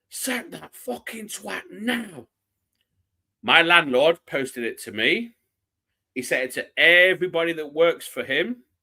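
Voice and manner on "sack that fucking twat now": high, furious, raging shout. Retelling being filmed throwing something after a goal: imitating own past shout. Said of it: "literally shouting".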